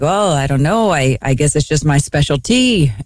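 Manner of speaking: put-on Norwegian accent, sounding unsure. Retelling a player's reply to a question about scoring, Norwegian accent. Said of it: "this is [name]'s Norwegian accent".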